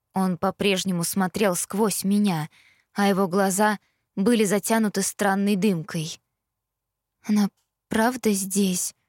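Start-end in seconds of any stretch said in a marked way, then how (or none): 7.2-8.9 trembling, shaking, quavering voice. The narrator asks Ethan whether Mary is really here: trembling voice. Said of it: "дрожащим голосом спросила я".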